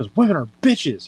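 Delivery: imitated angry voice. Retelling what a pissed-off friend said on leaving her bay: imitating an angry friend. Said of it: "She's all pissed off".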